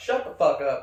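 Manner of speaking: forceful, emphatic voice. Showing Tina how to say it with force: forceful. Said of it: "you gotta say it with force".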